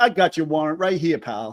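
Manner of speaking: put-on New York accent on every word. Discussing a warrant statement from a legal case, imitating Tiffany Knox, New York accent. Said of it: "she says it with a New York accent".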